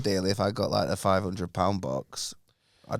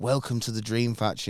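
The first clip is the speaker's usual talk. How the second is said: normal talking voice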